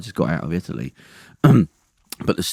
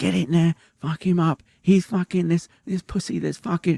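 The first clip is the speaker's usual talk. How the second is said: mock very high, wild, shrill screaming; 12 semitones higher than usual. Retelling how she burst out the front door: imitating someone screaming. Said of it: "she'd come out screaming".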